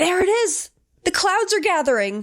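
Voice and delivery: acted, high, shrill scream. Retelling a woman pointing at the sky: imitating a scream.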